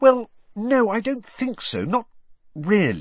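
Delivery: very high, awkward, swooping, hedging delivery. A girl answers her friend's question about another friend, awkwardly. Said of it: "said Hermione awkwardly".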